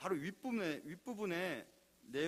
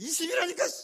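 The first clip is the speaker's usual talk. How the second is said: stubborn bellow, very high, very loud, shrill and insistent; 13 semitones higher, 12 dB louder than usual. Retelling a story about a loud-voiced man insisting on his answer, shouted loudly. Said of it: "목소리가 커요. 막 이런 사람이에요".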